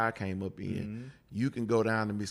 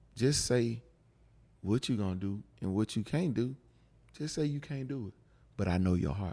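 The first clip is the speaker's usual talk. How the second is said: straight-talking, fatherly tone of an elder. Retelling what he said when he sat the speaker down: imitating someone talking slowly. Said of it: "and he talked slow, like his daddy talked".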